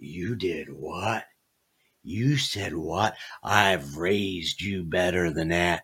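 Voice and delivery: low, quiet, stern tough-guy voice. Retelling the speaker's wife reacting to the speaker, in a Clint Eastwood Dirty Harry voice. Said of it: "my wife turns into Clint Eastwood, Dirty Harry".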